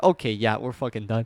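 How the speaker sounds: ordinary delivery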